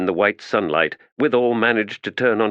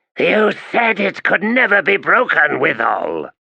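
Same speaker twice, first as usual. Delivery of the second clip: hissed words, high, swooping; 9 semitones higher, 4 dB louder than usual. Narrator reading the crippled god's reply to the weaponsmith, hissing. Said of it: "The crippled god hissed".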